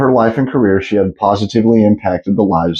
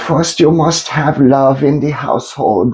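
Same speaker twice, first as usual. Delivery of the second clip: put-on high little grandma voice with a German accent; 6 semitones higher than usual. Imitating a famous sex therapist's voice: Dr. Ruth impression. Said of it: "I don't even know if I could do the voice".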